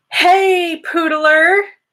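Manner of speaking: high, loud, excited shout.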